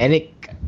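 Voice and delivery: stress placed on ethnic. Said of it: "emphasize it's actually".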